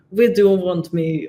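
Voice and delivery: put-on loud Turkish accent. Describing a surgery, quoting what the surgeon asked in a turkish accent impression. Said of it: "in his like Turkish accent".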